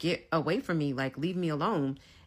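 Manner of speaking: plain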